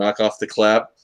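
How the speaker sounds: plain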